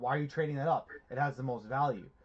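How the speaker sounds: usual speaking voice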